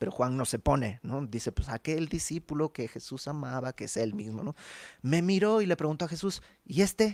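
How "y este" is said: high, contemptuous, scornful, belittling tone. Retelling a disciple's question to Jesus, in a mock-dismissive tone. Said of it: "yo lo dije ahorita en despectivo".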